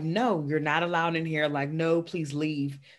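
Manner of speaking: usual speaking voice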